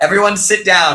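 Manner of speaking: ordinary talk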